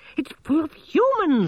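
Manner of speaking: very high, very loud, slow squeaky cry. Narrator reading a character's complaint in a story, squeaked. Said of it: "squeaked Gerda".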